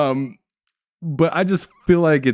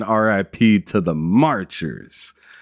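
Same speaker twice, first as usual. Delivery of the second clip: normal talking voice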